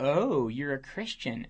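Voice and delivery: play-acted patronizing, dismissive, talking-down tone. Retelling what a lady who yelled at the speaker said, mock-condescending. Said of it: "She actually condescendingly said".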